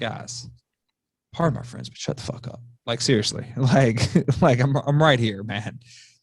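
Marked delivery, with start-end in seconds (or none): 0.0-2.6 soft, hushed whisper. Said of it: "And it's like".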